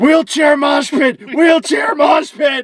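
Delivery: put-on high, slow, drawn-out old-man yell.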